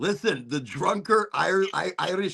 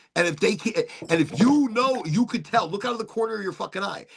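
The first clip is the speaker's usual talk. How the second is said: plain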